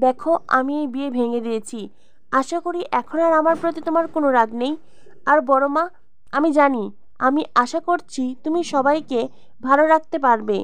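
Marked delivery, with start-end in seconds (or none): none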